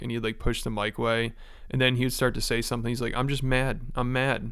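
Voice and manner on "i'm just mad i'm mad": slow, fake-sobbing voice, words breaking. Retelling how someone pretended to cry and couldn't talk: imitating Brendan's fake crying. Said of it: "he was pretending like he was crying".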